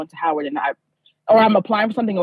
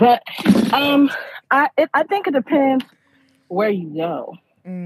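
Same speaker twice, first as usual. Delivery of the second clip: out of breath, halting, phrases breaking up, higher; 5 semitones higher than usual. Just off the treadmill, the speaker answers a question, out of breath. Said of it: "sorry i'm out of breath".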